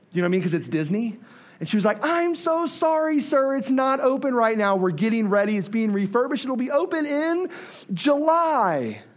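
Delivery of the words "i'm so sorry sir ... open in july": heartbreaking, bright, sweet, apologetic, pitched-up voice. Retelling her answer when he asked if it was open, mock heartbreaking apology with smile. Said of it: "she said it like she broke my heart, but she did it with a smile".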